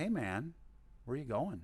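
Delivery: the calmest, very soothing voice. Retelling how a nurse stopped him getting off the table, imitating his very calm voice. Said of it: "with the most calm voice you've ever heard in your life".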